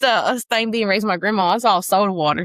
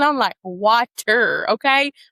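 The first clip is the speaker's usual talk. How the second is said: usual speaking voice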